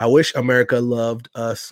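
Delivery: ordinary talk, nothing marked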